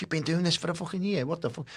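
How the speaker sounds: very high, shrill, furious voice. Giving a workplace example, the speaker acts out a boss's angry scolding. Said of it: "the boss fucking gives you down the banks".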